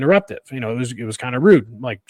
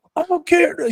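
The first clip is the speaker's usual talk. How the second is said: shrill high-pitched yelling. Retelling an argument, quoting a friend's girlfriend: imitating someone yelling. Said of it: "She's yelling".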